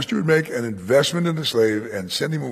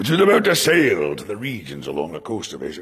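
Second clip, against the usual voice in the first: low, movie-style put-on pirate voice; 5 semitones lower than usual. Reading a bible verse aloud about a ship setting sail: pirate voice. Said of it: "I slip into the voice of the pirate".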